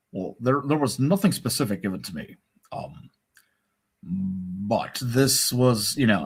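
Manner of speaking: halting delivery with pauses, drawn-out but. Quoting what was said, imitating Obama. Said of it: "I don't do a very well Obama".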